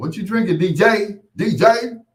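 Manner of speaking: acted proud tone. Retelling how people at the club asked: imitating someone saying it proudly. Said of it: "They say it so proudly".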